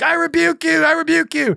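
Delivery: put-on raw, very high, rough shriek. Retelling a frightening night, imitating own screaming at the mirror. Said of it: "I was screaming".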